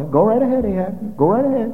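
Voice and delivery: dry, knowingly sarcastic tone. Retelling a man's reply to the king, acting out a sarcastic reply. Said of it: "I think he said that rather sarcastically".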